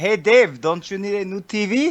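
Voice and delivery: slow, put-on French accent. Retelling what Frenchie Ben says: imitating Frenchie Ben's French accent. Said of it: "I can't do his accent tonight".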